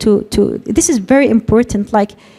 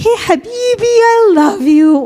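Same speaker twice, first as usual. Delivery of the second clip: put-on very high, slow, drawn-out baby talk; 10 semitones higher than usual. A speech therapist explains how moms talk to babies, demonstrating baby talk. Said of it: "baby talk".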